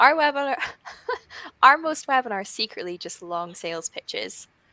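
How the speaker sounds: giggling, cracking up through the words. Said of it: "I'm laughing 'cause of the secretly".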